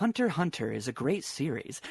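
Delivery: earnest, dead-sincere delivery. Describing a collaborator's way of talking, imitating Alexander's sincere voice. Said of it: "he talks like this".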